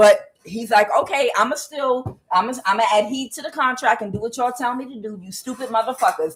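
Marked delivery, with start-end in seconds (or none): none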